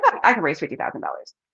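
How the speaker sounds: put-on casual, offhand tone. Retelling advice on how to talk about money: imitating saying it like it's nothing. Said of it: "You have to say it like it's nothing".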